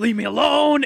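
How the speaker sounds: high-pitched street-corner style outburst. Imitating a homeless person walking down the street: Al Pacino voice. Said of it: "they sound like Al Pacino".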